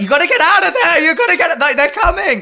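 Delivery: very high, very loud, shrill yell. Retelling yelling at the tv at someone on screen: imitating own yelling. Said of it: "I was yelling at the T V".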